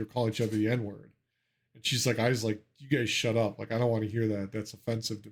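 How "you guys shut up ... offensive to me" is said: plain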